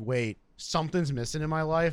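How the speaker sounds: ordinary talk, nothing marked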